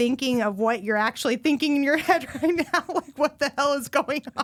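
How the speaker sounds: talking through helpless, hard laughter. Telling the other person she isn't upset, just crying with laughter. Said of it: "I'm just crying, laughing so hard".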